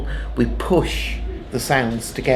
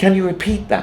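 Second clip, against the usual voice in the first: "repeat" with stress on second syllable -peat; 8 semitones higher than usual. Showing where the accent falls in a question, stress on 'repeat'. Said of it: "the key word there is repeat, not can, not buddy".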